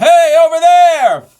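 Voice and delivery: theatrical Broadway calling voice. Demonstrating one shape a calling voice can take: Broadway calling voice. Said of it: "that was very Broadway".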